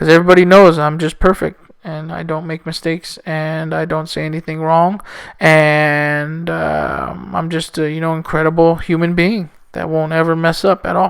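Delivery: soft, sarcastic self-praise. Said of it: "I'm obviously being sarcastic".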